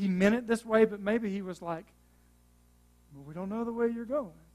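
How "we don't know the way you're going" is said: timid, sheepish, apologetic tone. Imagining how he might have said it: mock-sheepish. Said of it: "kind of sheepishly".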